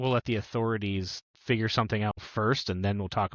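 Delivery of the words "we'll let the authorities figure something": usual speaking voice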